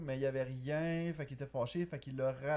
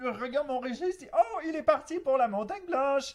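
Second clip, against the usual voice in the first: shrill, very high, very loud cry; 11 semitones higher, 8 dB louder than usual. Retelling a Donkey Kong story, doing Blaster's line as a Blaster impression. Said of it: "J'ai vraiment une imitation de Blaster".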